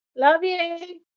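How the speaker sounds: high, cracking voice breaking mid-word. Speaking to someone who just came into the house: voice cracking. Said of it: "My voice just broke".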